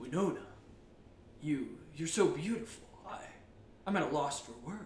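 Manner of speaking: very low, deep leading-man voice, dropped way down. Retelling a movie scene, speaking as the actor: Keanu Reeves voice. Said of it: "That's why Keanu Reeves voice".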